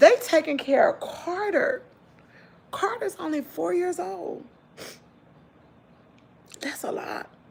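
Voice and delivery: hushed, breathy, tearful speech, crying through the words. Speaker talking about who takes care of four-year-old Carter, crying. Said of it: "I don't know why I'm crying".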